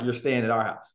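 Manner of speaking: usual speaking voice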